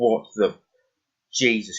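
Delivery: loud startled outburst.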